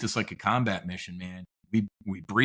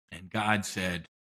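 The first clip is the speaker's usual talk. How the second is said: ordinary talk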